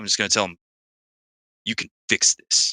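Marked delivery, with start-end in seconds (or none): 1.6-2.7 slow, stern, commanding, bordering on angry. Rousing him just awake enough to look at him, commanding, almost angry. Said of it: "in a commanding voice that's almost angry".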